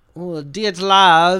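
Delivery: imitated Russian accent. Saying a place name when asked to: Russian accent. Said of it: "Say it with a Russian accent for me".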